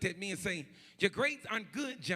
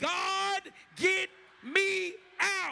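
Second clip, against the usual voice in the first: mock crying out, very high, very slow, drawn-out; 11 semitones higher, 5 dB louder than usual. Leading the congregation in a prayer line, shouting a plea to God. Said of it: "shout like he did".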